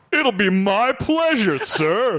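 slow, lilting, sing-song cartoon voice. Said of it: "It's sing-song".

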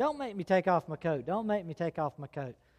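mock crying, pleading tone. Retelling a boy begging the teacher: imitating a crying plea. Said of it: "he started crying, literally crying".

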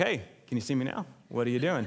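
put-on sarcastic deadpan delivery. Retelling a brother-in-law confronting line cutters: sarcastic Chandler Bing manner. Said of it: "in his, uh, Chandler Bingness and his bigness".

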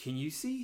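very hushed whisper under the breath. Retelling how a character who couldn't see whispered to the group; retelling a whisper. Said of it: "he's whispering".

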